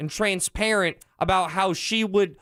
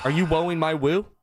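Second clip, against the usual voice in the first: put-on, mock aggressive tone; 3 semitones lower than usual. Telling off a co-host for saying whoa: mock aggressive tone. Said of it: "He sounds a little aggressive over there".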